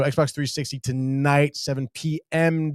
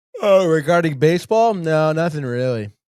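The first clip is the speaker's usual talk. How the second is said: loud groaning yawn warping the words; 2 semitones higher, 6 dB louder than usual. Answering whether there is other baseball news, yawning while talking. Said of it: "like a demon took over your voice there 'cause you were yawning".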